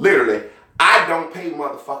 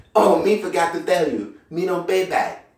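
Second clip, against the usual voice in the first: guileless put-on Mexican accent, broken English; 3 semitones higher than usual. Retelling what a coworker said on payday: imitating a mexican accent, innocent-sounding. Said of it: "And it sounded so innocent".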